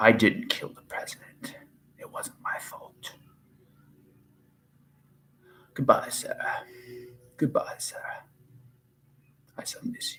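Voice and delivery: breathy, hushed, whispered character voice. Trying out an impression for the chat: Tom Baker impression. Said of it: "so I try his accent, um, his voice".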